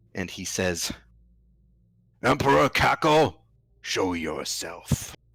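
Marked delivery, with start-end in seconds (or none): 2.3-5.2 booming, thunderous, high commanding voice. Game master voices a man calling out after turning visible, booming voice. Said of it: "you hear his voice boom out".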